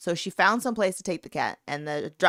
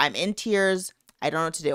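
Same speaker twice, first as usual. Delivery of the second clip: ordinary talk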